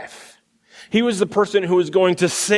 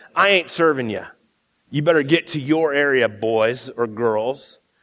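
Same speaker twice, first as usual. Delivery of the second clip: imitated condescending tone, much lower; 5 semitones lower than usual. Retelling how a waitress turned away college kids, imitating her derogatory tone. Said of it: "in a derogatory tone".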